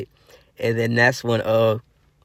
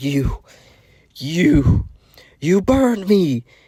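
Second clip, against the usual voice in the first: high, slow, heavy-breathed pained gasping. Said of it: "As he was breathing heavy".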